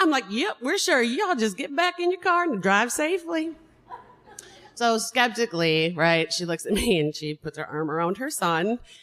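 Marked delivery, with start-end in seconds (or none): 0.3-3.5 put-on Southern American sheriff accent, pitched higher. Retelling what they told a stranger on the roadside: imitating a Southern sheriff. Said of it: "transformed into a Southern sheriff".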